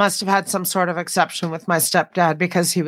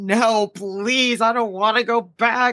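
put-on begging, pleading voice, higher; 4 semitones higher than usual. Retelling being sent back to Thailand, imitating own begging. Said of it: "I just begged and begged".

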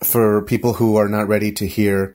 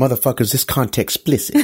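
put-on voice, very fast, words jumbled and mixed up; 3 semitones higher than usual. Warning listeners about the episode's content, imitating a friend, all fast, words mixed.

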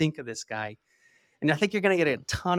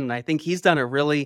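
ordinary talk, nothing marked

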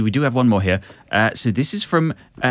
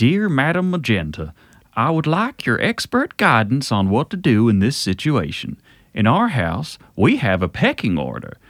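put-on Floridian accent. Reading aloud a letter to Madam Magenta: generic Floridian accent. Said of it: "Generic Floridian".

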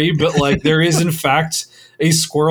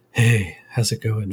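put-on breathy ASMR voice, lower and quieter; 7 semitones lower, 4 dB quieter than usual. Teasing someone about their raspy voice after meetings, imitating a quiet breathy voice. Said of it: "Very breathy sort of sounding".

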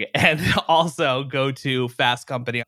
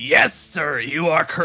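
deliberate, very slow, stretched-out words; 4 semitones higher than usual. Greeting the host on the podcast: Ed McMahon impression. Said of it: "that's my Ed McMahon impression".

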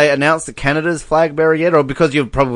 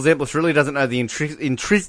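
ordinary talk

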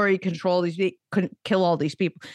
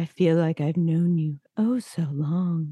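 creepy, flat, deadpan droning monotone. Picturing a man's line in his podcast voice, flat creepy monotone. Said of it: "in his creepy monotone affect podcast voice".

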